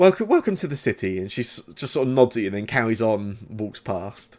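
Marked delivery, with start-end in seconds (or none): 0.0-1.2 slightly mocking tone, high and quick. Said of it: "there's a slightly mocking tone".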